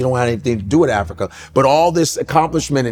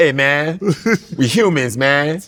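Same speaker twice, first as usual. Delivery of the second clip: very slow, every word stretched out. Acting out how the first people talked: Eddie Murphy voice. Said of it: "Everybody sound like Eddie Murphy".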